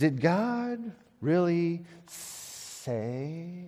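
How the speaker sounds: tempting, hissing-style serpent voice. Retelling what the serpent said about God, he does his serpent impression. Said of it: "That's my serpent impression".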